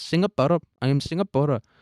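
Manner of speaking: put-on woman's voice, Indian accent. Acting out meeting an imagined indian woman who gives her name: voicing an imagined indian woman. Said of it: "an Indian person and be like".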